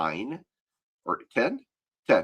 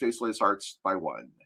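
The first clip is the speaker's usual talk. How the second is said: plain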